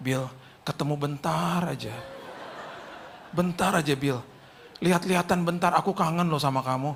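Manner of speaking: very soft, extremely gentle, hushed voice. Retelling what someone said to him, retelling very soft speech. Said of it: "dia ngomong gini lagi sama saya dengan lembut banget".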